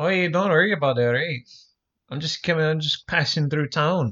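put-on Scottish accent on a cowboy voice. Playing a cowboy passing through town: put-on Scottish accent. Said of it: "I'll be a Scottish cowboy".

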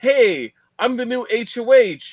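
high-pitched, loud, excited voice.

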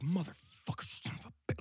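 angry, violent muttering, slow. Retelling a stranger cursing at a show: imitating violent muttering to himself. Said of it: "really violent mutters to himself".

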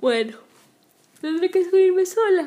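speaking through a yawn. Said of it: "Ahí estoy bostezando".

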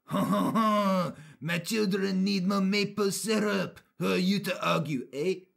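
put-on French-Canadian accent. Speaker quotes a French-Canadian mother about her children, in a French-Canadian accent. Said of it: "This is what French Canadians sound like".

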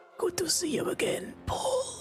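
unearthly, breathy, inhuman whisper. Retelling a scene where a figure greets Paul, in a very inhuman voice. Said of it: "It's it's a very inhuman voice".

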